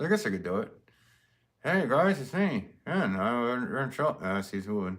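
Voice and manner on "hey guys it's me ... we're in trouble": high, slurred ventriloquist voice through unmoving lips. Trying out ventriloquism for the first time: ventriloquist voice. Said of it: "I think it's starting to work now".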